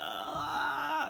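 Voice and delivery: panicked, creaky high wailing.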